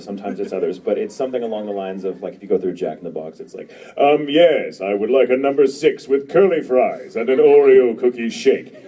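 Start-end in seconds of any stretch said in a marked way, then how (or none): 4.0-8.6 loud playful borrowed voice. Ordering at a drive-through, the speaker uses Inaru's voice. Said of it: "usually in Inaru's voice".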